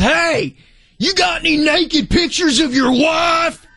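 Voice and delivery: put-on big thick Texas accent, hollered. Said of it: "With a big, thick Texas Ranger accent".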